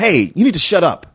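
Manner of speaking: threatening, intimidating tough-guy voice. Speaker acts out how the listener shushes talkers at the theater, in a mock loud intimidating voice.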